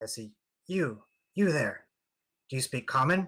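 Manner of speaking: whispering. A game player, acting in character, addresses someone they spot: whispering. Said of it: "and I whisper".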